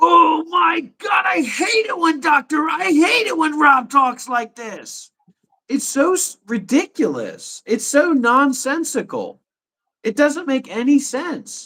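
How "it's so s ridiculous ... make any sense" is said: deeply upset outburst, swooping rant. Complaining about the way someone talks: very upset. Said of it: "I'm I'm very upset about this".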